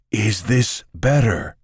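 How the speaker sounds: high, theatrical, showy stage whisper. Reading a story aloud, Omrak asks if this is better: stage whisper. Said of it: "Omrak lowers his voice to a stage whisper".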